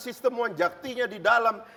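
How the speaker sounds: high, loud, heated, angry, hammering outburst.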